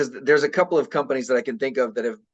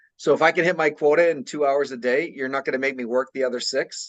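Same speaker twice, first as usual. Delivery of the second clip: plain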